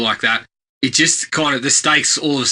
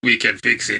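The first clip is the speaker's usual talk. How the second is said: put-on Austrian accent, action-hero style delivery. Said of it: "a guy with Arnie's voice goes".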